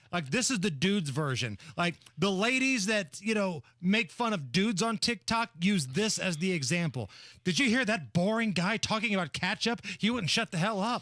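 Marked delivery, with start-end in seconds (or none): none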